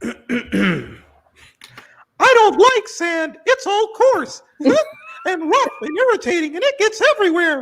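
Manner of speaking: silly, very high, swooping cartoon character voice. In a game, a player performs an assigned line as a silly cartoon character voice. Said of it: "you are going to do it as a silly cartoon character".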